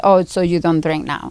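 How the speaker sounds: ordinary talk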